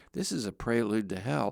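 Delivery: imitated whispered voice. Retelling what the groom said right before the wedding: imitating a whisper. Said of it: "whispered in my ear".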